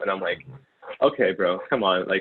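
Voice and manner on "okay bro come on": usual speaking voice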